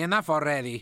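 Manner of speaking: normal talking voice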